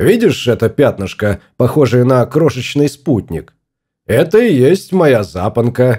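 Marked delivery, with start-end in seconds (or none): none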